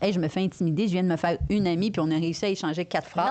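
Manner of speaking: ordinary talk, nothing marked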